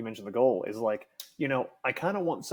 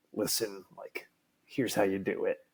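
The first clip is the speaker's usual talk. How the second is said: menacing, villainous delivery in a low, sinister tone; 4 semitones lower, 5 dB quieter than usual. Showing one of three tones for reading it: sinister tone. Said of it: "you've got your sinister".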